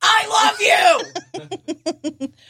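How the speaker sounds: shrill, very high, gushing exclamatory shout. Giving a tip on reading exclamation points, showing the exclamation-point tone. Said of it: "you should immediately change your tone of voice to".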